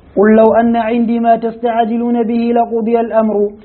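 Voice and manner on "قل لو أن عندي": usual speaking voice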